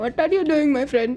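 put-on Indian accent. Speaker tells a friend how he sounds, in Indian accent. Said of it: "Like in an Indian accent".

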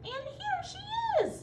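very high, slow, tiny, drawn-out wee voice. Reading Goldilocks aloud, the narrator voices the bear who spots her: wee small Baby Bear voice. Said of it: "cried the wee small baby bear in his wee small voice".

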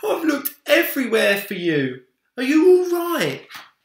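very loud, very high, swooping crying-out voice. A father who searched everywhere finds his son, crying out. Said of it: "cried his father".

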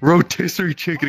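light, restrained, high, mild scream. Retelling a skit where a friend runs by: imitating a scream. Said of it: "just screaming".

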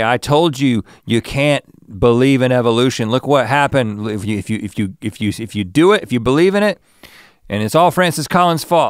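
put-on lecturing in an Australian accent. Imitating what Ken Ham will say about their stories: Ken Ham Australian accent. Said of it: "he's got an Australian accent, but he's gonna say".

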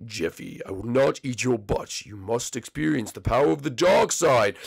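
very deep, very low rumbling villain voice, bottom of range. Answering Jeffy in a puppet-style skit: Darth Vader voice. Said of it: "Darth Vader, please don't eat my butt".

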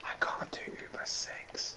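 slow, unvoiced whisper under the breath. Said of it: "You were whispering".

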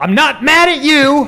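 yelling at high pitch and volume.

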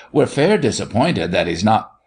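ordinary talk

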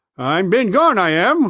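slow, sheepish, squirming, embarrassed. Narrating, Ben Gunn answers Silver, who has just addressed him: embarrassed. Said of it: "wriggling like an eel in his embarrassment".

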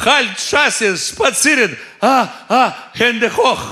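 yell called out high and slow. Retelling dozing off and suddenly shouting german phrases, retelling a yell. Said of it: "Как заору".

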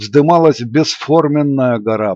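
ordinary delivery

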